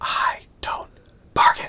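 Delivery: whispered, close and hushed. Retelling a movie scene where a marshal whispers into a man's ear: retelling a whisper. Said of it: "he whispers to Newman's ears".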